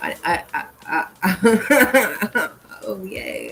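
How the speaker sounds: drawn-out, very slow stutter on I. Host starting a segment on plants, stuttering. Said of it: "I'm stuttering".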